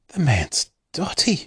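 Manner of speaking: quiet mumbled aside, muttered under the breath. A grandmother reacting to the letter just read aloud, muttered. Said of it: "muttered Grandma Josephine".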